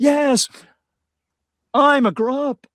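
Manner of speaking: very high, drawn-out, emotional delivery. Retelling a scene where Captain Kirk is called a grup: emotional Captain Kirk impression. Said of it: "he gets all emotional".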